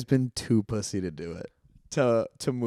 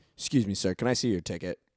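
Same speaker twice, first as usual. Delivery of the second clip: strict, stern, demanding voice; 3 semitones lower, 4 dB quieter than usual. Acting out an imagined usher catching a moviegoer: imitating an usher. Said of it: "an usher was gonna come out with a fucking flashlight and just be like".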